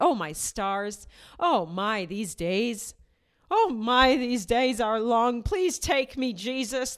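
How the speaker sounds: put-on loud, drawn-out old grandmother's voice. Reacting to a man who talks like the speaker's grandma, imitating grandma's voice. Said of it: "That's what my grandma sounds like".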